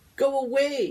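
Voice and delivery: high, trembling, quavering pleading voice. As two classmates spray extinguishers around the room, a student pleads in a quavering voice. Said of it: "pleads in a quavering voice".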